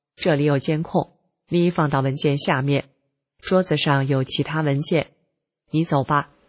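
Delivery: normal talking voice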